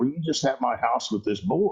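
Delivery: tearful voice, speaking through tears. Retelling a mom's question in a story: imitating a crying woman. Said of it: "and she's crying".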